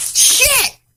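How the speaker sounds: startled, very high, pained curse. Retelling a glass cutting a hand, retelling a pained curse. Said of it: "the glass broke and cut my hand".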